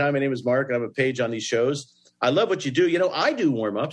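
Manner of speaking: plain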